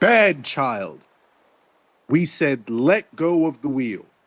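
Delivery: theatrical, grand, commanding voice of authority. A player speaking in character to a little girl in the game, booming voice. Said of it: "in a booming voice".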